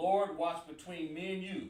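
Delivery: plain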